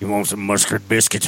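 very low, soft, hushed voice. Joining in on another speaker's impression: Sling Blade impression. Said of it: "That was a sling blader".

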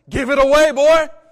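very loud, high preacher's cry. Speaker imagining how the preacher John would say it: imitating John preaching. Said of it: "i imagine he kind of says it like this".

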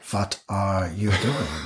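put-on straight German accent, low and soft. Quoting her reaction to cookies broken into milk: straight German accent. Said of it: "straight German accent".

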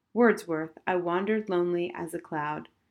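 plain reading voice

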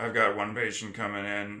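play-acted low, flat, worn-out tired drone. Speaker acts out herself tired in the ambulance, retelling own tired monotone. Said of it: "So like when I get tired".

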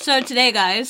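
talking with mouth full. Podcast host starts the topic while eating; talking with mouth full. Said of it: "sorry, my mouth is full".

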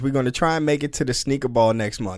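ordinary talk, nothing marked

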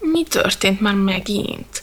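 whiny put-upon moan. A narrator reads a sleepy character's question in a story, whined. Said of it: "Nyafogta pofánka".

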